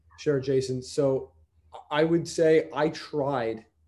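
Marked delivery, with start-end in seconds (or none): 2.9-3.6 emphasizing the word 'tried'. Answering Jason's question about the internship, with stress on 'tried'. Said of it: "I stress the word tried".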